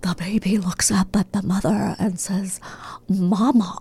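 put-on creepy storyteller voice. Asked by the other speaker to do James Spader: James Spader impression. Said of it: "plays this really creepy guy".

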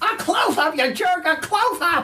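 very high, classic cartoon duck voice. A guest promoting a cartoon show does a Daffy Duck impression. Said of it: "That's a pretty good Daffy".

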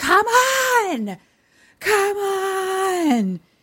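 very loud, very high, swooping, drawn-out holler. Retelling a film scene, a character yelling from the car: imitating someone yelling. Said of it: "just yells".

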